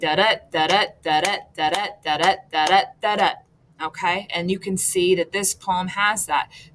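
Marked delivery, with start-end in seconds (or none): 0.0-3.3 repeated da-DA rhythm, stress on each second syllable. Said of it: "So an iambic poem's gonna be".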